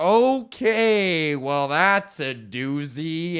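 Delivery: unimpressed, dismissive, very slow, drawn-out drawl. Imitating a gate agent reacting to a hard name: imitating a gate agent's dismissive tone. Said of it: "they always say it like".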